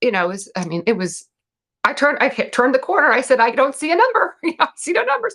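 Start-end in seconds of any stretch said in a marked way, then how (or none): 3.4-5.3 mock exasperated, frustrated yell, high and building. Recounting yelling at their trainer, retelling their own yell. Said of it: "I'm literally yelling this at my".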